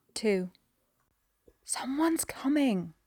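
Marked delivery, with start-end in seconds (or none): 1.7-2.9 urgent hiss, pitched up. Narrator reads Parker warning over the comms: low urgent hiss. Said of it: "Parker hisses over the comms, low and urgent".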